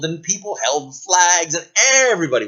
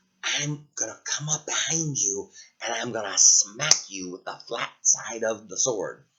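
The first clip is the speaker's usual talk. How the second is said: quiet whispered voice; 6 semitones lower, 7 dB quieter than usual. Telling a story as the knight, secretly telling the dragon the plan: whispering.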